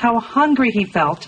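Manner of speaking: plain reading voice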